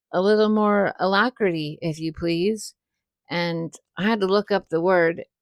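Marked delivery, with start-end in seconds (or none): none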